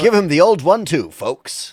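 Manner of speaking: put-on very high, loud, old-timey 1940s-style voice. Joking with the table: old-timey 1940s voice. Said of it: "I'm just trying to sound like it's nineteen forty-two".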